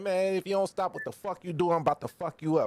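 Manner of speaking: put-on natural American accent, casual street-talk style. Retelling what he told a man in an argument, in his American accent. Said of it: "I went straight back to my American shit".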